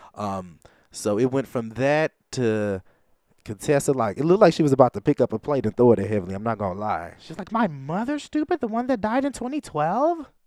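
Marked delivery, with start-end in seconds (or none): 7.5-10.2 very high-pitched, indignant caricature voice. Retelling Contessa reacting to her late mother being called stupid: mocking Contessa's voice. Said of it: "I'm just mocking Contessa".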